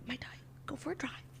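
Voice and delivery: hushed, barely audible ASMR whisper. Mocking an actress who whispered through a film: imitating Kristen Stewart whispering as Diana. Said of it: "she was doing A S M R".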